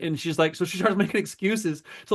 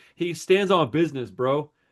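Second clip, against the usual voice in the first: plain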